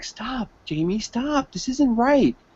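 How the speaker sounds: hushed, high, pleading whisper. Acting out asking your brother jamie to stop, acting out a whispered plea. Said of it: "and you're whispering it too".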